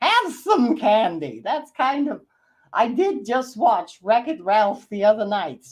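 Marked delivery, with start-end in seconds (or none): 0.0-1.4 animated cartoon king character voice. Explaining the character voice that first came to mind, King Candy voice. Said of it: "King Candy".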